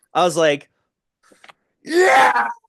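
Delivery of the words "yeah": mock very high, loud, excited whoop. Retelling watching a wrestling move: imitating own cheer. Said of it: "Like that".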